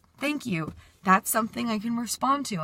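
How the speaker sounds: very calm, composed, mature, articulate speaking. Retelling how they answered someone during a heated moment, retelling a very calm, slow reply. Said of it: "very calm voice, very slow speech".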